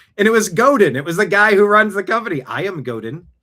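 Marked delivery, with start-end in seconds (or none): 2.4-3.2 put-on hard-to-place foreign accent, leaning Swedish. Retelling what the man who runs the company said in the elevator, imitating Godin's foreign accent. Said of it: "I don't know if he's Swedish or what accent it was".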